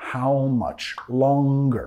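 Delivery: pitch falls away on the word "longer". Teaching an English question: falling pitch on longer. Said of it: "Bajando entonación al final".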